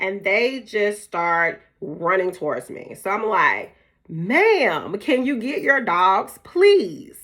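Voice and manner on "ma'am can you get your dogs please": play-acted raised voice calling from far back, ma'am drawn out. Recounting calling out to a dog owner far ahead while her dogs ran over, talking loud. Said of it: "I'm talking loud".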